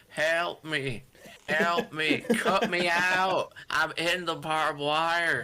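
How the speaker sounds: very slow, very drawn-out southern drawl. Describing a wrestler caught in barbed wire calling for help: imitated southern drawl. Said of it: "in his southern drawl go".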